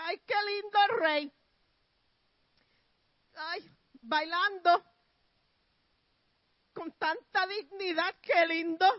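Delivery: high, loud, dripping sarcasm with fake admiration. Retelling a Bible story, acting out Saul's daughter's words to the king, imitating a sarcastic tone. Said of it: "bien sarcástico".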